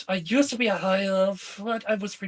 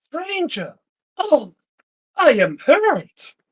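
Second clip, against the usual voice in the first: very loud, theatrical, pitched-up fake wounded indignation; 8 semitones higher, 9 dB louder than usual. [name] answering a man who called them stranger, mock indignation. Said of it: "[name] says in mock indignation".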